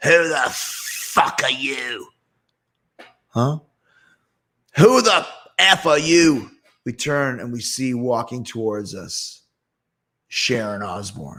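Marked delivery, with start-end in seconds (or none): 0.0-6.5 mock enraged, infernal, hellish-sounding angry voice. At a baseball game, a furious woman confronts the group: Sharon Osbourne's angry voice from hell. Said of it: "we hear this voice from hell".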